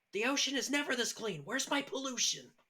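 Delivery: put-on very high-pitched shrill yell. Retelling a game bug where no trash appeared: retelling own yell. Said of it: "I yelled".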